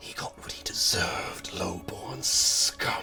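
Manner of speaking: slow, ghostly whisper right at the ear. Voicing a spirit heard at the edge of hearing: spirit whispering in ear. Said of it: "almost like someone leaning over your shoulder and whispering in your ear".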